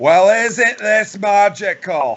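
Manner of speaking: loud, very slow, drawn-out comic drawl. Picturing a scene from Austin Powers: Fat Bastard impression. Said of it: "the Fat Bastard impression".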